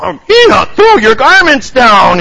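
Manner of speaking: very high, cross voice. Narrator reads a story; the ignored character addresses the people at the well, cross. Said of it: "he said crossly".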